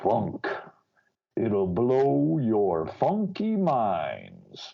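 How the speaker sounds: put-on weird, electronically distorted voice. Quoting a man's favorite little phrase: weird electronically distorted voice. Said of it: "doing this weird, you know, electronic fucking with his voice".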